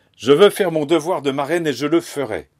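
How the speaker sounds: violent, loud, high-pitched shout. In a violent scene with the grandmother, [name] shouts through the wall; shouting. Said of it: "[name] criant".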